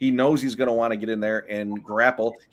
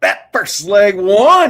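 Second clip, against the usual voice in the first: lively, excited, enthusiastic delivery; 10 semitones higher, 11 dB louder than usual. Repeating a line after being asked for more enthusiasm, enthusiastic. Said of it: "need a little more enthusiasm out of you when you say that first leg one".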